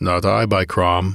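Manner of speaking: ordinary delivery, nothing marked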